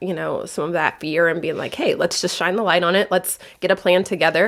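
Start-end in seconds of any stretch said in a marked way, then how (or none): none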